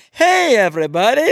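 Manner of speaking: very loud, high-pitched shout. Retelling a movie scene where Doctor Nick greets everyone: Doctor Nick voice. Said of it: "that's his character".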